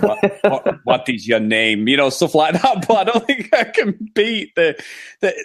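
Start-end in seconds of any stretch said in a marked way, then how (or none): 0.0-1.9 put-on German accent, much lower pitch. Offering to have a go at the accent, doing a Dad's Army German accent. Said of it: "I could probably go down the route of Dad's Army".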